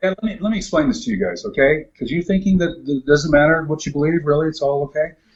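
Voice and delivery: plain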